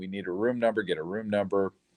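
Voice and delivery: ordinary talk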